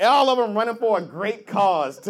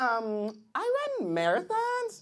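put-on acted young female voice; 3 semitones higher, 8 dB quieter than usual.

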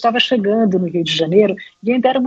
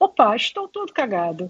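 put-on Portugal-style European Portuguese accent; 4 dB quieter than usual. Retelling how the Portuguese actors said a line in the play: put-on Portuguese accent. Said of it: "Eu estou aqui emulando o sotaque português".

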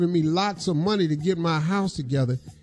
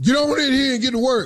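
mock yelling, high-pitched and barked; 6 semitones higher, 4 dB louder than usual. Telling how a man at work treats you in front of coworkers; retelling his yell. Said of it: "He yells out stuff like".

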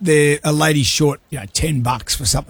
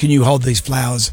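plain

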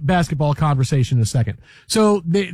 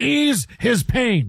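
pitched-up sportscaster delivery; 5 semitones higher than usual. Told that you sounded sad and desperate, show another way to do it, a Marv Albert impression. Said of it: "I can do it like Marv Albert".

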